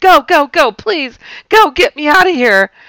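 high, very loud, terrified, panicked acted scream. Retelling fleeing noises in the woods: retelling a panicked scream. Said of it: "I scream".

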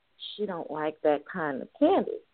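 low, hushed whisper. Speaker retells a girl's mother whispering as they walked out, imitating a whispered remark. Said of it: "her mother whispered".

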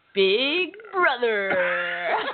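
clumsy, bad, announcer-style show-intro voice. Asked how the intro guy says it, doing a bad impression of the intro announcer. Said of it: "I'm bad at impressions".

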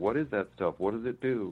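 ordinary talk

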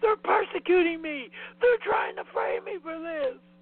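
high-pitched paranoid yelling. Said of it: "He's just yelling".

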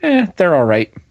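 put-on flat, mock-deadpan broadcaster delivery. Recounting a broadcast exchange, the speaker quotes the colleague's reply, retelling Dave Prezak's deadpan line. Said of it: "as deadpan as possible".

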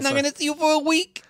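very high-pitched, grating, needling voice. Quoting a movie scene, doing a Rosie Perez impression. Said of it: "I'm not even doing it as annoying as it is".

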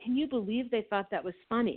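ordinary delivery

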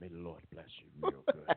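whispered, breathy, hushed pulpit-style preaching voice. Showing how they sound once they get in the pulpit, in preacher voice. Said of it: "our preacher voice".

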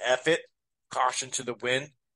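ordinary talk

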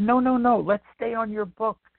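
put-on high, insistent young girl's voice. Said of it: "She said".

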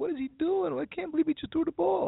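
put-on, very high-pitched screaming outcry. Retelling how the guys reacted to a bad throw: imitating guys screaming.

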